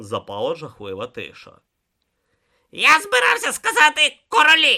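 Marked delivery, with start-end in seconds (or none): 2.7-4.8 reproachful grumbling. Correcting the one who just finished his sentence for him, reproachful grumble. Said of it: "докірливо буркнув Ом".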